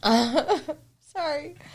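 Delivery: high, words breaking up with laughter. Apologizing after another speaker's joke: laughing while talking. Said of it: "Stop making me laugh".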